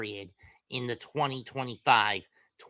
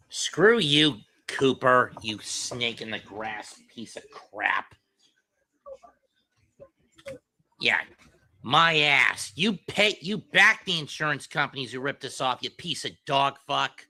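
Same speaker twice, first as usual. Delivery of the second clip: loud, furious rant, letting loose; 3 semitones higher, 6 dB louder than usual. Ranting at a political ad during midterm season: angry rant. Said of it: "I need to go off".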